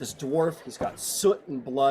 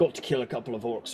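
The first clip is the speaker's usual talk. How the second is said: grumbling gruff character voice. Voicing a dwarf smith leading a guest inside: grumbling dwarf voice. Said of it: "He grumbles a little bit".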